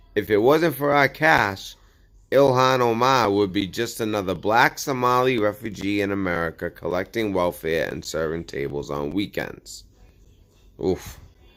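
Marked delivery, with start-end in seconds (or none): none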